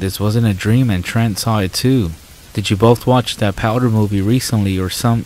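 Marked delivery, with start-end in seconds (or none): none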